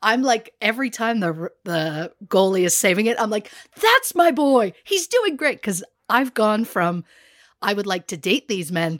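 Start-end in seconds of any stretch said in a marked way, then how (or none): 3.8-5.6 shrill, thrilled screaming, pitched very high. Retelling cheering each goalie save, acting out screaming. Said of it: "I'm screaming".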